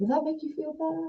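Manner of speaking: very high, soft, nice and gentle voice. Asking listeners if they'd prefer someone gentler, a nice and gentle voice. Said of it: "someone who talks like this, nice and gentle".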